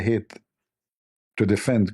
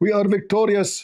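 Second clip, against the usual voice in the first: mock triumphant, boastful voice. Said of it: "they claim that they are victorious".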